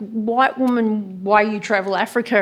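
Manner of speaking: acted hostile, confrontational, angry, aggressive delivery. Retelling what a woman in a hostel kitchen said: imitating an angry, aggressive tone. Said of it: "like angry, angry, aggressive kind of tone".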